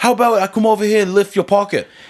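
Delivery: put-on high, mocking British street accent. Joking about a street confrontation, the speaker mocks a British accent. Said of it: "like a British accent".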